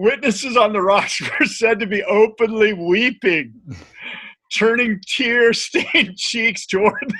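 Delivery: loud reading broken by bursts of giggles. Reading a written passage aloud, unable to stop laughing while reading. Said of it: "I can't even read it without laughing".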